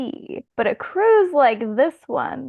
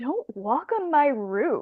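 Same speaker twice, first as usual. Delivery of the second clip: slow, stupid-sounding, dumb line delivery; 5 dB quieter than usual. Retelling a movie scene where Luke says a line: imitating Luke's stupid line delivery. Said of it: "Luke just says it in the most stupid way".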